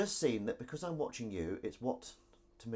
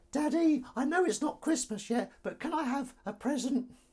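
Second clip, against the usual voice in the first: put-on very high, whiny little kid voice; 5 dB louder than usual. In a live mock advert, the son asks his daddy for a present, whining little voice. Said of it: "stop using that whining little voice".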